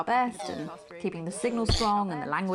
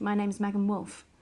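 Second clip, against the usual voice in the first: put-on posh accent; 3 semitones higher than usual. Signing off a soap scene: posh voice. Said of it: "doing this posh gobshite's voice".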